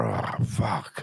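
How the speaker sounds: quiet put-on whisper. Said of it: "saying kind of in a whisper".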